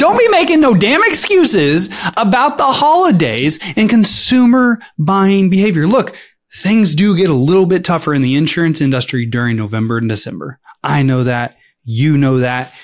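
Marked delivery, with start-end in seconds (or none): 0.0-5.9 pumped-up, very high-pitched, amped-up voice. Saying it again after being told it was too quiet: amped up. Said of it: "Can we amp it up?".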